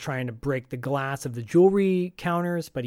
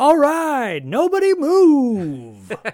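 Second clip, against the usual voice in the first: high, very loud booming announcer yell, very slow, drawn out; 12 semitones higher, 9 dB louder than usual. Recapping a movie, voicing robbers barging into a shop, in a wrestling announcer voice. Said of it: "Almost like in a wrestling announcer voice".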